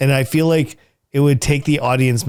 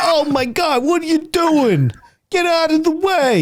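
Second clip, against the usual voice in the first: very high put-on New York gangster accent; 14 semitones higher than usual. Speaker demonstrates the one voice they say they can do: New York gangster voice. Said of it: "it's like a New York gangster".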